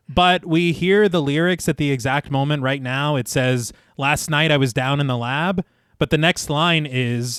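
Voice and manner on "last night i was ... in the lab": ordinary talk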